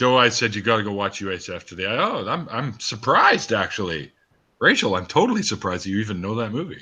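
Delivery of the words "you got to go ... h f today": normal talking voice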